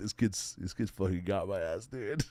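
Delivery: talking through laughter. Retelling own reaction while laughing, recalling own laughing. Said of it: "laughing 'cause I'm like".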